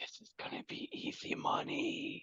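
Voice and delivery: hushed, very quiet whisper. Playing a character at a blackjack table, whispering to a companion. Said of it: "I whisper to Damon".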